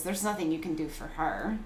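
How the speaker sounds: grizzled, dark, low voice with a weird lilt. Retelling what she said when her voice rang out: dark grizzled voice with lilt. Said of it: "very like dark and, you know, grizzled sort of voice. Um, still that same weird lilt".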